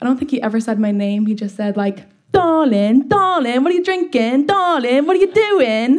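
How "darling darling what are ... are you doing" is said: put-on goofy, dopey rural English accent, pitched up. Imitate your first date talking to you about drinking, in [name]'s super dopey country English accent. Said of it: "super dopey like country English accent".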